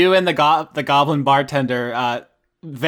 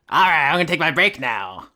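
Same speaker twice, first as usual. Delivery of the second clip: goblin character voice. Running a game scene, voicing the goblin at the bar in a goblin voice. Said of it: "the goblin says".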